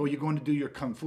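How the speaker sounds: derisive, mocking, taunting tone. Retelling how a client's wife reacts to his training: imitating a mocking tone. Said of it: "almost a mocking tone in it".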